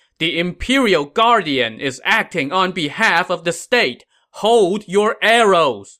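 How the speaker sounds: yelling like an officer.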